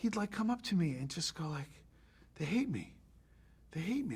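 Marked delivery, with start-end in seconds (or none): 2.4-4.2 utterly baffled, bewildered, pitch swinging widely. Retelling Forest Whitaker's complaint to the speaker: imitating confounded Forest Whitaker. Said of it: "not angry, confounded".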